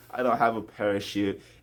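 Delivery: ordinary delivery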